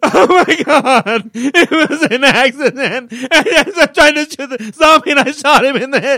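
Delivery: very loud, drawn-out fake crying while talking. Acting out an imagined excuse to the other speaker, doing fake crying. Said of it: "I would totally do the fake crying".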